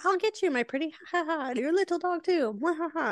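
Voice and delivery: sky-high threatening voice followed by a cackle. Retelling the story, the witch threatens Dorothy: Wicked Witch voice. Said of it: "And she's like".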